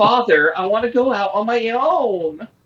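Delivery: high, flamboyant eighties voice, final word stretched. Imitating the voice a trailer gives Pinocchio, flamboyant eighties Pinocchio voice.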